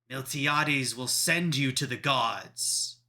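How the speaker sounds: loud, booming, amplified voice with a ringing echo. Voicing an armored knight as he approaches you, deep booming amplified voice. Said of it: "in a deep, booming, somehow amplified voice".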